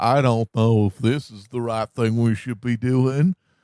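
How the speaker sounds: play-acted mild, backhanded, passive-aggressive hedging tone. Mocking a politician who disagrees with Trump: imitating Rand Paul passive aggressively. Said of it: "passive aggressively be like".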